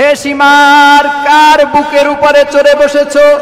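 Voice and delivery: high, loud, rebuking cry.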